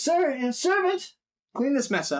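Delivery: very high, weary, sigh-laden delivery. Narrating a game scene, a man speaks to a servant after a killing, sighing. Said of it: "he kind of sighs and says".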